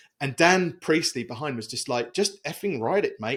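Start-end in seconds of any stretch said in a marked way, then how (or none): 2.1-3.4 bad, rough, put-on Australian accent. Recounting what Dan Priestley said about putting it in the book, terrible Australian accent. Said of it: "It's a terrible Australian accent".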